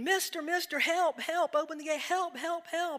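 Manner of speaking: high, loud, pleading screaming. Retelling a joke, a man chased by a bull: imitating a man screaming for help. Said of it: "the guy is now screaming".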